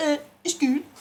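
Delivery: put-on Danish accent. Showing how a word sounds said by a Danish person: imitating a Danish person. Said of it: "It sounds like a Danish person going".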